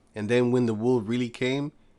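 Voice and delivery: ordinary talk, nothing marked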